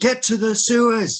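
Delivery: urgent, very high shouted voice. Warning fleeing people in character as a creature attacks: shouting an order. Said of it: "I just start shouting".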